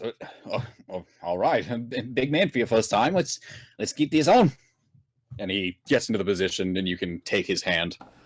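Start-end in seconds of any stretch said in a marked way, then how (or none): 0.0-4.5 flustered, caught-off-guard stammering start. Narrating a scene, voicing a man whose eyes widen at the amount, stuttering. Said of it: "he s- stutters".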